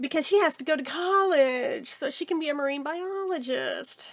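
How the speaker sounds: put-on, obviously sarcastic, dry mocking delivery. Speaker describes a story's ending to listeners: sarcastic. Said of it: "you can hear the sarcasm in my voice".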